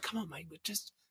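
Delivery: put-on muttering. Retelling a dream of being corrected on stage, imitating muttering under breath. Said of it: "under my breath, I was going".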